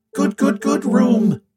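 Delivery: squealing, a full octave up, very high. Shown the narrator's lab, he answers with a high squeal. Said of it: "he squeals. His voice is a full octave higher than normal".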